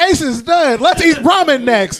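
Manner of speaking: very high, loud, excited yell. Mocking how an anime dub handles a death scene: put-on excited Luffy voice. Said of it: "Luffy with his excited voice".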